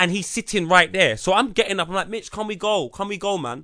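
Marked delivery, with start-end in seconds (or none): 2.1-3.6 play-acted, pointed tone meant to be heard. Retelling asking a friend to leave so a stranger hears: speaking loudly. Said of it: "saying it loud enough for that guy".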